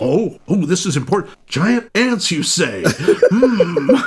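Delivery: overly rapt, feigned earnest interest. Mocking how listeners react to the giant ants announcement, in mock earnest interest. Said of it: "They're so like".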